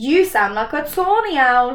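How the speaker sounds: ordinary delivery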